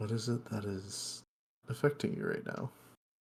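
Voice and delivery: very quiet, barely-there whisper. A character leans down close to another character and asks, very quiet. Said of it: "very quietly say".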